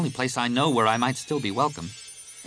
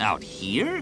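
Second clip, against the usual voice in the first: in disbelief, incredulous; 2 semitones lower than usual. Han, hearing Leia name the ship a freighter, answers incredulously. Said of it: "Han said incredulously".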